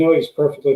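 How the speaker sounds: ordinary talk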